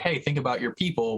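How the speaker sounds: ordinary talk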